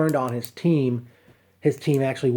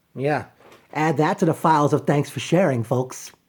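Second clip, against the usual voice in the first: usual speaking voice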